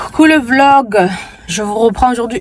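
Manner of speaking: breathless, panting, out-of-breath voice. Vlogger greeting viewers after walking to the car, out of breath. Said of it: "Je suis essoufflée".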